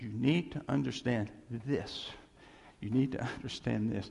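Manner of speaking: ordinary delivery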